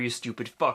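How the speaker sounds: ordinary delivery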